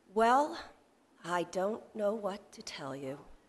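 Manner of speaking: acted, very slow, drawn-out, gloomy, dismal delivery. Quoting a woman on the phone after dead silence, retelling a slow, dismal reply. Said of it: "very slowly, dismally".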